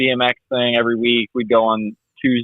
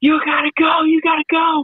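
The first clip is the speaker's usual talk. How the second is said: put-on, very high, shrill screaming dad voice. Retelling a dad at a kids' race screaming at his kid: imitating a dad screaming. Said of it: "screaming at his kid".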